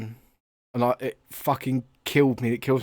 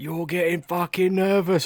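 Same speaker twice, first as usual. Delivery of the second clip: put-on high, jeering shouting of kids; 6 semitones higher than usual. Retelling kids taunting the opposition goalkeeper at a game: imitating kids shouting. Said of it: "And they're shouting at him".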